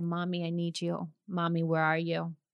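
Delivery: put-on tearful crying child voice. Retelling a phone call from a young daughter: imitating a crying child. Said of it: "And she was crying".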